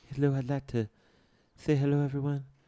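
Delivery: soft-spoken, hushed voice, under the breath. Describing a very soft-spoken man, the speaker does a soft-spoken H.R. Giger impression. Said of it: "Very soft-spoken. He sounds like this".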